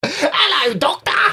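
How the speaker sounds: put-on voice pitched way up, giggling through it. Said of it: "That's my [name] impression".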